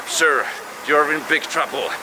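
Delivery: normal talking voice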